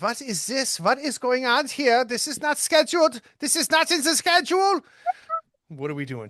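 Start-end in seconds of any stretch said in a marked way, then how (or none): 0.0-4.8 terrible fake German accent, very high, shrill and swooping. Narrating bodies flying out of a building, voicing the officers in a bad german accent. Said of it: "I have the worst German accent".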